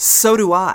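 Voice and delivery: play-acted entitled, snippy tone full of attitude. Retelling a seat dispute, the speaker quotes the woman, dripping with attitude. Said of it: "dripping with attitude".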